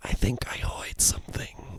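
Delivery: faint, crackly, creepy whisper, barely audible. Speaker describing a creepy game's kid voice, imitating a whispered line. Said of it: "just whispered lines".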